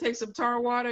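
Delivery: plain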